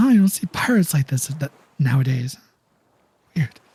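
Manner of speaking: dwarf voice, stage-whispered aside. Storyteller voices the dwarf reacting to the pirates, whispering dwarf voice. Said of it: "the dwarf whispers to himself".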